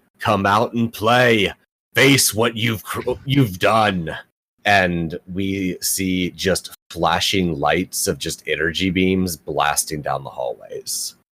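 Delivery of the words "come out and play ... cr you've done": booming, shouted yell like over a loudspeaker. A game narrator voices someone over the school intercom: booming yelling voice. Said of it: "a booming voice over the intercom, yelling".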